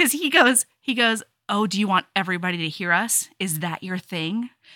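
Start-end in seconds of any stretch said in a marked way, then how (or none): 1.5-4.5 mock sexy passive-aggressive delivery, lower and quieter. Retelling what a book character says to a partner: imitating a sexy passive-aggressive tone. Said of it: "in such a sexily passive-aggressive way".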